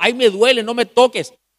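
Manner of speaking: put-on high, pained yell. Recounting a painful treatment, the speaker reenacts what he yelled, retelling own past yelling. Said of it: "le gritaba".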